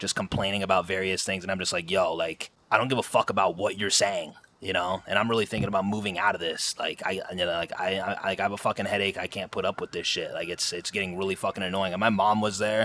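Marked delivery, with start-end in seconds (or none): none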